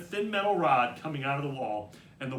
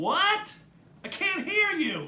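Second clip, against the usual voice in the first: high, loud mock deafness, feigning not hearing. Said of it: ""What did you say?" routine".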